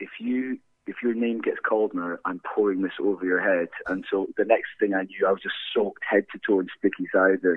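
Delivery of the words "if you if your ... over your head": quiet whisper, put-on. Retelling a mate's threat before the winners were called: imitating a quiet whisper. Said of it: "very quietly".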